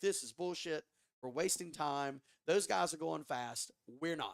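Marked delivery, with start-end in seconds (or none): none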